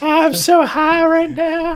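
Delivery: very high, very slow cartoon voice. Doing a South Park impression for the others: Towelie voice. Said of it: "I was going for Towelie".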